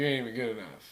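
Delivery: put-on sarcastic teasing voice. Retelling how a fellow player teases a showy shot: imitating Nate's sarcastic jab. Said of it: "say it in a sarcastic way because he's joking".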